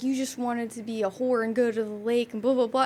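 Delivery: ordinary delivery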